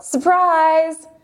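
loud yell. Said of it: "Juliet and the guests yell".

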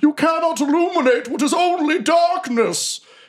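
shrill, high-pitched, furious war cry scream. Voicing an armored foe charging into battle: screaming across the battlefield. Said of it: "He screams across the battlefield at you".

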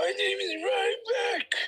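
very high, very slow, drawn-out voice. Introducing oneself while imitating the other speaker: imitating Ryback's voice. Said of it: "it depends on what version of my voice".

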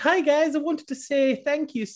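put-on Irish accent. Starting a mailbag bit, done in a put-on irish accent. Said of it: "I can do it in my Irish accent. ... Oh, I'm Irish".

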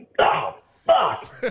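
sudden, mad, angry swearing outburst. Retelling throwing and breaking a paddle after playing badly: imitating own angry outburst. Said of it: "'cause I'm so mad that I sucked".

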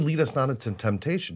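ordinary delivery

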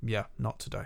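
sulky, unwilling, sullen tone. Retelling how a man in a museum answered his friend: imitating someone sullen. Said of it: "really kind of, like, sullen about it".

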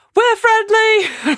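very high, shrill, really loud shout at full lungs. Standing on the front of the boat as others get closer, shouting really loudly. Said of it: "really loudly".

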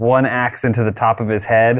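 ordinary talk

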